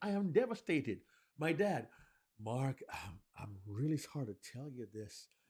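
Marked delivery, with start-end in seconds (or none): 1.4-5.3 reluctant, emotionally struggling, hesitant, pained, sorrowful voice. Speaker demonstrates a father breaking bad news to his son, reluctant, emotionally struggling father. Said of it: "He's struggling emotionally".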